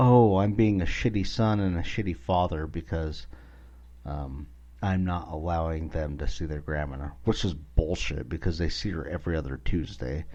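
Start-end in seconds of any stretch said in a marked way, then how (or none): none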